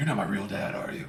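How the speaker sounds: intimidating, powered-up anime fighter hero voice. Retelling a fan-made video scene, imitating Beast Gohan. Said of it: "He's like".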